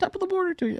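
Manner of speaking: put-on voice, pitched very high. Imitating a YouTuber's signature greeting: Jacksepticeye impression.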